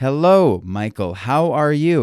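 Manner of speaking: put-on American accent, best attempt. Retelling his Skype call with Michael, best put-on American accent. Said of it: "I was trying to use my best, you know, American accent".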